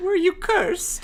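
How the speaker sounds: put-on very high, pitched way up teenage boy voice. Reading Zach's line in a story when asked: Zach's teenage boy voice. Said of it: "your teenage boy voice".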